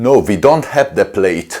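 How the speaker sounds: put-on rigid, very stiff German accent. Retelling a bike company's reply about a base plate in a stiff German accent. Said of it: "in a very stiff German accent".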